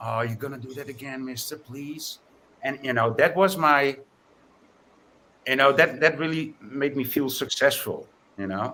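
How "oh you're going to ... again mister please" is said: put-on eager, keen, pleading young boy's voice. Retelling how a twelve-year-old from the skate park asked: imitating a boy's pleading tone. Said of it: "the inclination in his voice was so like".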